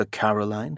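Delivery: ordinary delivery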